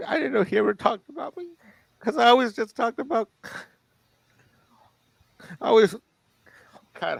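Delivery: talking through tears. Recalling a phone call with a friend, crying while talking. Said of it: "how am I crying now?".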